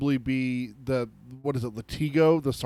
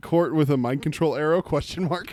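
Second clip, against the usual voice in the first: ordinary talk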